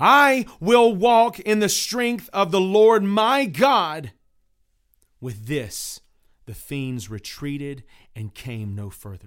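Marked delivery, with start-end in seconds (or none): 0.0-4.1 loud cry with utmost force. Narrator reads a man crying out as fiends close in, forceful cry. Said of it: "he cried out with a most forceful voice".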